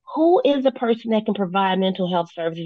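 ordinary talk, nothing marked

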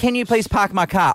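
plain

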